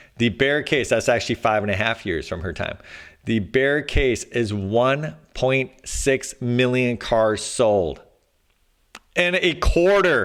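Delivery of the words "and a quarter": sudden, pitched-up yelled outburst. Going through a bear-case estimate of cars sold, yelling. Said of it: "I didn't mean to yell".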